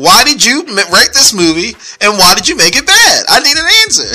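full-on high yelling. Speaker demands an answer from the movie's writer, yelling. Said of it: "Sorry, I'm back to yelling again".

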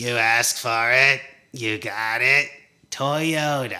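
put-on very slow, drawn-out old man voice. Retelling a film scene of an old man reading billboards: imitating Arthur reading a billboard. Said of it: "this old man that reads every sign".

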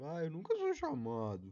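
very loud, high, swooping self-pitying moan. Speaker, talking about going out, does an imitation of himself. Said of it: "Essa é uma imitação de mim mesmo".

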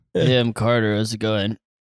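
put-on deep voice. Greeting the others while imitating a friend's voice: imitating Carter's deep voice. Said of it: "just for having a deeper voice".

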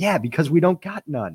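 thick put-on American accent, high pitch. Retelling a woman's reply to a man's remark, in a very distinct accent. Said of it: "in a very distinct accent".

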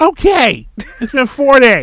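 high, loud, mocking tone.

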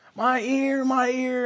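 acted, very slow, high, drawn-out sobbing wail. Retelling a sick child's cries of pain in bed: imitating a child screaming and crying. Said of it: "he's just screaming and crying".

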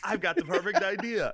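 high-pitched, laughing, put-on joking voice.

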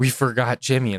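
acted-out freak-out. Retelling a dad realizing they forgot jimmy, imitating his freak-out. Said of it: "start freaking out".

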